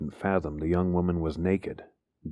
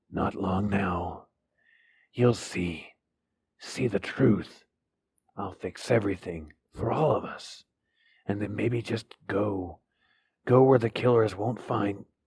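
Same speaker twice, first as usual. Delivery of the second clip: hoarse, raspy, slurred, unhinged, distant voice; 3 semitones higher than usual. A young woman speaks distantly to a man, promising to set things right, in a hoarse, raspy, slurred voice. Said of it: "the young woman was naked, / the young woman was naked, / Her voice was hoarse, ... Her voice was raspy, thick, slurred from the missing teeth, and lower in pitch than it had been just a few seconds a".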